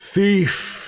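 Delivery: high alarmed cry. A game narrator voicing a magic mouth in a stone wall calling out, very loud shout. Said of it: "in a very loud voice".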